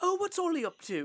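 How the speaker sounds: put-on speaking with British accent. Speaker quotes their dad asking about an acquaintance, in a British accent. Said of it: "why does my dad have a British accent now?".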